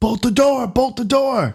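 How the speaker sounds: shrill, very high screaming yell. Voicing a character running down a tower as an alarm sounds: screaming in character. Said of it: "He starts screaming".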